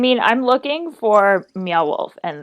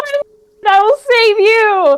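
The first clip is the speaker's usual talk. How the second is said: very high, loud heroic battle cry; 12 semitones higher, 5 dB louder than usual. Charging into the bushes to rescue someone: yelling in character.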